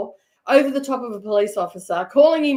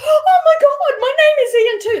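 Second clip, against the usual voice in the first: put-on squeal, much higher and louder; 4 semitones lower than usual. Retelling what the man in the back of the paddy wagon said, high-pitched squeal. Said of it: "in a high-pitched squeal voice".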